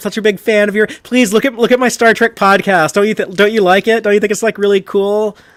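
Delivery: put-on flustered fan gushing. Imagining meeting a Star Trek actress at a convention: mock starstruck fan gushing. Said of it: "like Shaw trying to talk to Geordi".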